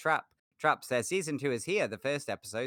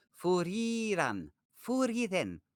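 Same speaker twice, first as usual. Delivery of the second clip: put-on Japanese-accented English, pitched higher; 6 semitones higher than usual. Speaker says a name aloud again, in her best Japanese-English accent. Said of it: "I did my best Japanese English".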